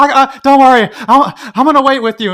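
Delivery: breathless, gasping, very loud, high-pitched. Quoting a movie scene for the others: breathless Matt Damon voice. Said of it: "we were doing kind of breathless Matt Damon".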